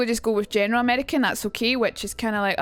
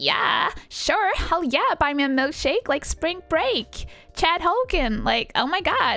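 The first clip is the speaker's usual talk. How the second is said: put-on, high, swooping Valley Girl accent; 7 semitones higher than usual. Acting out own reply to the milkshake offer: put-on Valley Girl accent. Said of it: "I was like".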